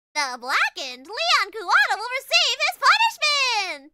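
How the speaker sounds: high, booming, loud cartoon voice with swooping pitch. Streamer wrapping up a murder case with chat, Monokuma voice. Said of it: "Monokuma voice".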